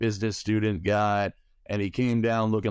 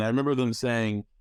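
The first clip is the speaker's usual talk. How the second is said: ordinary talk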